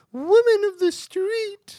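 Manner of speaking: very high, very loud, shrill, silly put-on voice. Saying a line in a funny voice when asked to: Monty Python-style funny voice. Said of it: "say it in a funny voice".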